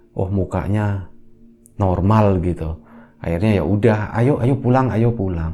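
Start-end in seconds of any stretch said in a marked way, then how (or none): none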